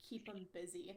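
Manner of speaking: hushed, quiet out-of-the-side mutter under the breath. Nodding to a companion and speaking only to him: quietly, under the breath. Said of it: "I really quietly say".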